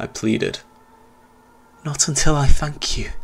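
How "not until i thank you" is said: whispered, higher. Narrator reads a boy's answer to a captive's plea: whispered. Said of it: "the boy whispered".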